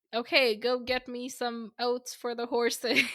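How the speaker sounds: normal talking voice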